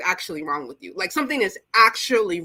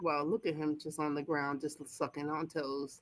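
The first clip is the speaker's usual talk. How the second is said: mock disgusted muttering, very soft and hushed; 6 semitones lower, 15 dB quieter than usual. Voicing what a woman on screen seems to think: voicing someone disgusted. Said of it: "she's disgusted".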